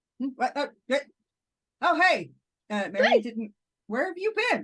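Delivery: acted talking while chewing. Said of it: "he's clearly taking a bite out of a sandwich".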